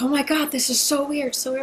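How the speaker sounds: high, panicky disbelief, like a panic attack. Retelling a friend's words on the phone while driving: imitating a friend panicking. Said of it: "she starts having a massive panic attack".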